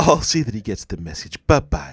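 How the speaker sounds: seductive, alluring delivery. Retelling a TV scene where the assistant answers the phone: imitating Phoebe saying bye. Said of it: "the way she says bye".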